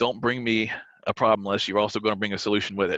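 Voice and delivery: ordinary talk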